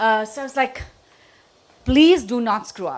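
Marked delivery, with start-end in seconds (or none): 1.8-3.0 mock-firm tone, much louder. Retelling warning a boy who kept making mistakes, imitating a firm tone. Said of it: "I was that firm with him".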